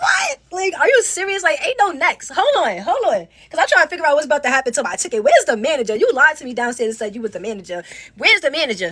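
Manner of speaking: usual speaking voice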